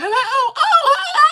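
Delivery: piping, squeaky falsetto, way up high. Retelling a bit from an earlier stream: high-pitched Tim Switzer voice. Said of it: "I was talking in a real high-pitched voice".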